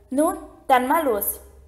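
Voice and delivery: ordinary delivery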